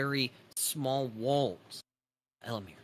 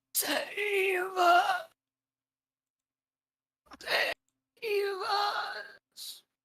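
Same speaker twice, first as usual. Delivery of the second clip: very high, very slow, rasping, crying voice; 3 dB louder than usual. Game master voicing a figure stumbling slowly toward the player: very raspy voice. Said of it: "you hear in a very raspy voice".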